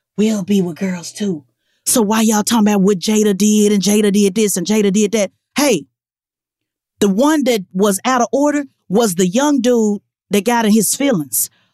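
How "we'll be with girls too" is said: put-on whisper, much lower, slower. Repeating a line for listeners who missed it, in a mock whisper. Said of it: "let me whisper it".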